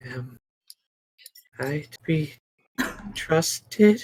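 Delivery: high, almost-crazed, manic whisper. As a player touches her to cast a spell, the game master voices a manic whisper. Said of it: "you hear an almost a manic whisper".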